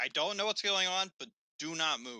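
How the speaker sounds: loud yelling. Playing a character ordering frightened commoners to stay put: yelling at commoners. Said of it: "I'm gonna yell at the commoners".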